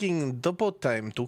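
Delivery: plain reading voice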